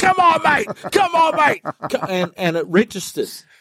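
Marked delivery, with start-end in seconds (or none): 0.0-1.6 very high, urgent, insistent yelling, repeated. Retelling how a mate grabbed their head: imitating the Mad Butcher yelling. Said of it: "started yelling at me".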